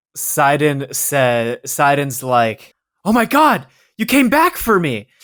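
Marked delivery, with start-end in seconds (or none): 3.0-5.0 ecstatic, overjoyed outburst, high and swooping. Voicing a character who hears a friend's voice: acting overjoyed. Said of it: "Sidon is so happy to hear your voice".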